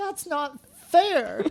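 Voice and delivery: put-on high, slow, whiny screaming wail like a girl.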